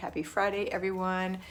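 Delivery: normal talking voice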